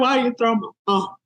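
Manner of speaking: put-on high, rushed sobbing through tears. Mother retelling when her daughter threw her phone in the toilet, imitating own crying. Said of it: "I cried".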